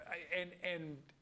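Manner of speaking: ordinary talk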